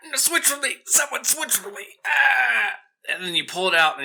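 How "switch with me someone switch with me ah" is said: very high, wounded goblin cries of pain. The narrator voices a goblin just stabbed through the torso: goblin crying out in pain. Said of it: "he's just like".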